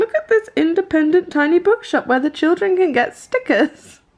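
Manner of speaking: sweet, high cooing full of delight. Imitating the other speaker pointing out something cute and sweet. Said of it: "who's pointing out something cute and sweet".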